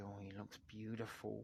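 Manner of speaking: play-acted eerie, creepy, unsettling tone. Retelling how the uncle in a clip said it: imitating a very creepy way of speaking. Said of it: "he sort of said it in a very creepy way".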